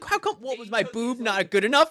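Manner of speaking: play-acted, high, heated, angry voice. Retelling what a character asked about a video: imitating someone angry. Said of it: "she's angry".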